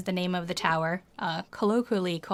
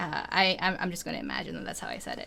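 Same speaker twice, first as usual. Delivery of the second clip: plain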